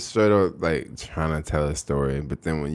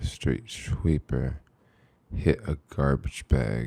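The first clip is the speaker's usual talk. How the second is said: public radio announcer voice; 3 semitones lower, 4 dB quieter than usual. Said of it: "Do that voice and describe dirty SF streets".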